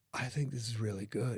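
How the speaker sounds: low-pitched voice, done badly. Imitating what Keanu Reeves would say about a movie: terrible Keanu Reeves impression. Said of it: "I have a terrible Keanu Reeves impression".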